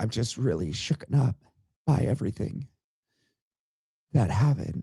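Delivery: put-on grief, half-whispered, cracking mid-phrase. Speaker showing how fake a solemn occasion is, doing fake sad voice cracking. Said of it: "I can just make my voice crack and be very sad".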